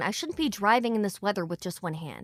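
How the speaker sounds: ordinary delivery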